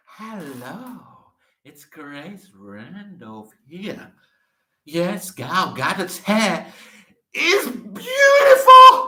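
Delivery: booming, slow, swooping, drawn-out delivery. Doing an impression of Grace Randolph praising an actress's hair. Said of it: "his Grace impression".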